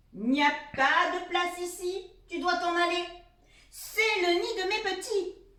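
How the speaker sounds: big, loud, angry, cross mother-fox voice. Narrator reading a children's story, the angry mother fox cries out, big angry voice. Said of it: "une grosse voix le fait sursauter".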